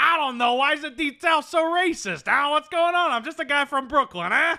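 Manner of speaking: loud, very high-pitched character voice. Mocking a movie character who claims ignorance of racism: imitating Viggo Mortensen in Green Book. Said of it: "He's like".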